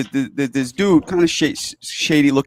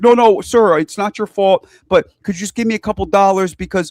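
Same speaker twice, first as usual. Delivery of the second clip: high, sweet, overly polite, super-nice begging; 5 semitones higher than usual. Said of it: "he's being super nice".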